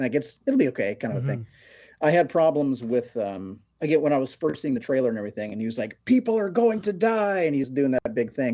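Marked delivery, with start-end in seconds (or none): 6.0-7.4 put-on play-acted, very high, childish yelling. Criticizing a Superman trailer, mimicking how he delivered the line: imitating yelling like a kid. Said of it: "he's kind of yelling like a kid".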